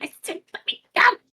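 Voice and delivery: straining, breathy, whispered kobold shout. Voicing a kobold held in a tiefling's arms: kobold shouting. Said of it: "just starts shouting".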